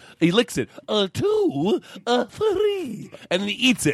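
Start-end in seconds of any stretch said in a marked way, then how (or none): 0.9-3.1 put-on cartoon owl voice. Retelling the old candy commercial, imitating Mister Owl. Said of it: "and he goes".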